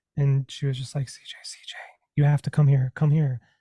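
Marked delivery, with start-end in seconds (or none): 1.1-3.4 put-on faint voice, said louder. Retelling being woken and called to the bed at night: imitating a faint voice. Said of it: "I heard a faint voice".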